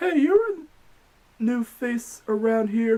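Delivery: badly put-on, high female voice. A PC gamer voices a game character greeting a newcomer, bad Mona female voice impression. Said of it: "Sorry about the female voice impression".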